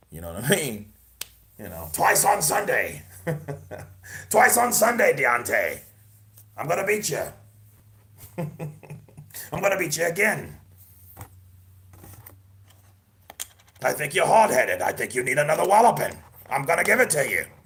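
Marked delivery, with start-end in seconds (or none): 1.9-17.4 raspy voice, pitched high and loud. Speaker imitates John Fury taunting Deontay: raspy John Fury impression. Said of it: "John Fury kind of has a more of a raspy ass voice".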